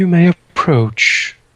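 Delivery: little, clear-toned voice. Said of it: "surprisingly uh, little thing, like um, uh, and clear voice".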